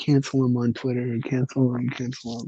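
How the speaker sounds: mock-angry, put-on loud outcry. Recounting how K-pop fans reacted to a podcaster, imitating angry fans. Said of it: "They were so mad".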